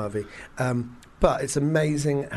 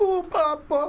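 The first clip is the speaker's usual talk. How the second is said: very high, silly, ridiculous put-on Italian accent. Mocking an actor's voice for a whole film, quoting him: ridiculous Italian accent. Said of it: "ridiculous Italian accent".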